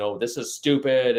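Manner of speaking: put-on belligerent woman's voice. Retelling a parent refusing the seller's answer; imitating a belligerent woman. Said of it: "she's getting very belligerent to this person".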